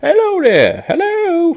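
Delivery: put-on very loud, very high, swooping sing-song elderly elf voice. Voicing the stable hand at the stable, an older wood elf fellow. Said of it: "an older wood elf um, fellow, and he's like".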